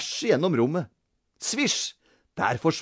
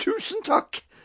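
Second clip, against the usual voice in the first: very high gasped voice. Mrs. Brage thanks Peter after he brings her a drink, gasping. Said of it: "gispet fru Brage".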